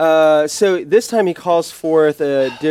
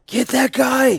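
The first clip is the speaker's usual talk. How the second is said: pained shout, higher pitch; 9 semitones higher than usual. Voicing an enemy hit again, ordering his allies: yelling in pain. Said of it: "he yells in pain".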